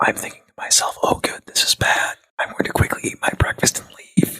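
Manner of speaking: hushed, breathy whisper. Thinking in character after overhearing a worrying conversation: whispering. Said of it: "I'm whispering because I'm being very quiet".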